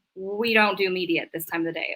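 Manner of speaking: ordinary talk, nothing marked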